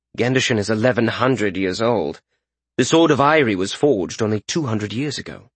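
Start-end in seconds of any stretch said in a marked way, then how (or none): none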